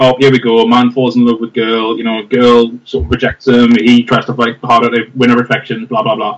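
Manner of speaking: plain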